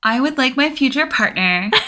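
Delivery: high, put-on girly reality-show voice. Answering a dating question in a put-on straight girl voice. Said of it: "That's my voice for Maps".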